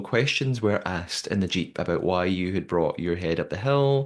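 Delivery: ordinary talk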